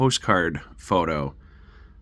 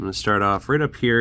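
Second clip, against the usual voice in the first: ordinary talk, nothing marked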